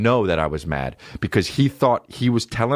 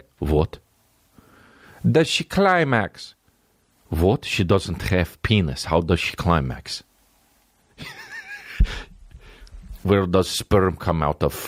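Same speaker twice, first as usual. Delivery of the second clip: put-on Russian accent, broken English, swooping pitch; 4 semitones lower than usual. Retelling what a russian guy says about women, in mock russian accent. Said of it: "the Russian guy is just like".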